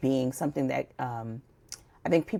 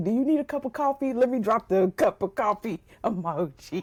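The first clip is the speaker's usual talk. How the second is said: dry, sardonic, acted sarcastic tone; 9 semitones higher than usual. Retelling own reply when the coffee emoji appears: imitating own sarcastic remark. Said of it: "old sarcastic me".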